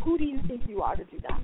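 normal talking voice

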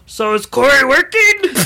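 big, high, slow delivery. Telling a story, redoing the landlord's question more landlordy, in Cookie Monster landlord voice. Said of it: "He sounds like the Cookie Monster".

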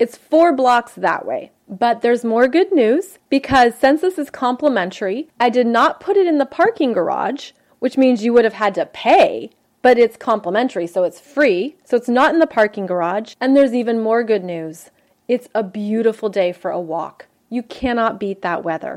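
plain

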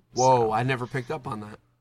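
dry, flat deadpan sarcastic delivery. Responding to someone explaining why Cuphead is called Cuphead, deadpan sarcasm. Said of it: "I'm working on my deadpan delivery".

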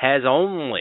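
the most sarcastic tone possible.

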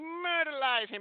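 very high eighties-style retro cartoon voice. Recounting a wrestling moment and mimicking a manager's odd cartoon-like voice for laughs, imitating a 1980s cartoon character voice. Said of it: "sounded like a cartoon character from the 1980s".

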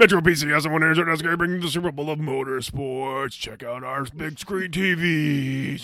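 put-on monster truck announcer voice. Riffing on a stadium promo video, slipping into the Monster Jam announcer voice. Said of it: "the Monster Jam voice".

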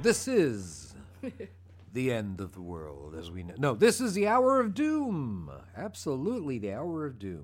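put-on theatrical old-time radio announcer, swooping pitch. Trying out a voice that another speaker calls a radio voice. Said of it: "Your radio voice?".

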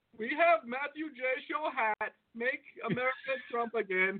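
put-on Indian accent. Told to do their best indian voice, the speaker plays a big fan doing an indian accent. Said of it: "your best Indian voice".

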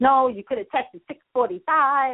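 heated, angry shouting, acted out. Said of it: "he starts to yell at me".

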